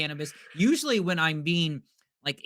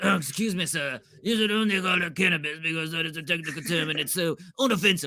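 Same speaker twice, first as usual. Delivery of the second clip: bad, terrible put-on French accent. Imitating an imagined stranger he says he doesn't need, in a terrible French accent. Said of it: "I don't know why this guy's French".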